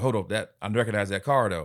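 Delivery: ordinary talk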